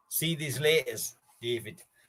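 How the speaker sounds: put-on half Scottish, half Newcastle accent. Saying goodbye to someone, the speaker puts on a half Scottish, half Newcastle accent. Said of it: "half like fucking Scottish Newcastle".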